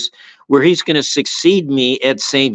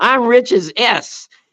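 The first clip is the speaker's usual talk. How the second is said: put-on yelling, pitched higher; 10 semitones higher than usual. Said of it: "he yells back at the kid".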